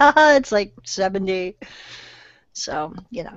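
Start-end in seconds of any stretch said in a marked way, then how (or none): 0.0-1.6 mocking words with laughter in them, amused. Retelling a call with her parents in Florida, imitating mom's laughing voice. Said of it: "she had that laugh in her voice".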